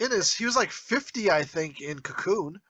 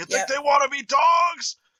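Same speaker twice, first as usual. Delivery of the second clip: put-on enraged man yelling, higher and louder; 6 semitones higher, 4 dB louder than usual. Retelling a film scene of someone wrecking the place: imitating Wilford Brimley raging. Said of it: "losing his shit".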